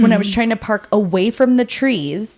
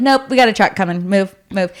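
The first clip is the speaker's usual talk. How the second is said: curt, offhand, dismissive tone. Retelling what a neighbor said about moving the car: imitating a dismissive neighbor. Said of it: "the way he said it".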